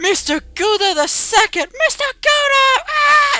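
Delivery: shocked, gasping crowd voice. Voicing the crowd reacting to Mister Gouda the second: gasping crowd. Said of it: "the crowd just looks at you and goes".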